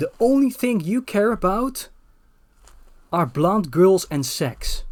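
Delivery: unhurried, slow, drawn-out mild screaming yell. Retelling how a woman stood up on a bus, imitating someone screaming. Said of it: "like she started screaming".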